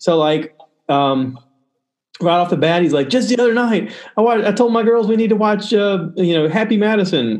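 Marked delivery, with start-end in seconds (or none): 3.1-7.4 high, stumbling, excited, starstruck fanboy gushing. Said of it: "'cause he's fanboying out".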